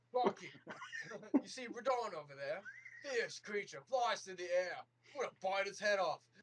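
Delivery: put-on very high, very loud, shrill Australian accent. Improvising a monster scene, voicing one monster in an Australian accent. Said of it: "but he has an Australian accent".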